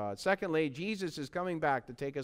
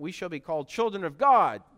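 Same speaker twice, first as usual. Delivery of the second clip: louder, emphatic exclamation. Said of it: "Exclamation point".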